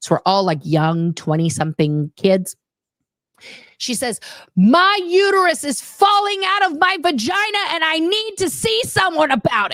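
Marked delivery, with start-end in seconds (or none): 4.6-9.8 mock very high, shrill, high-pitched yell. Retelling a coworker standing up to address the department: imitating someone yelling. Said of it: "she yells at all of us".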